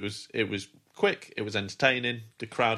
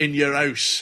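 put-on words in a Scottish accent; 4 semitones higher, 4 dB louder than usual. Wrestling reviewer quoting a wrestler's catchphrase, in a Scottish-sounding accent. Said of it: "You sound Scottish there".

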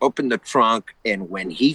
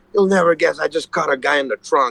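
mock words bubbling over with laughter; 4 semitones higher than usual. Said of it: "he just couldn't stop laughing".

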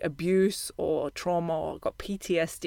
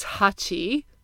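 ironic air quotes around touchy, set apart; 2 semitones higher than usual. Describing people after multiple traumas: scare-quote tone on touchy. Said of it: "I'm sure you can hear from my tone of voice that I'm using those quotations around it".

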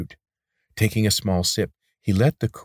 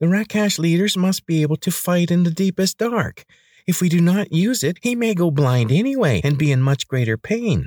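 thin, nasal, very high voice; 11 semitones higher, 4 dB louder than usual. Narrator reads another figure's reply in an argument over sealing eyes, thin nasal voice. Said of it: "A thin nasal voice replied".

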